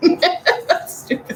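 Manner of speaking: high, slow, laughing, dismissive.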